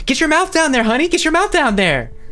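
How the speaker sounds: rowdy, high, loud whooping cheer.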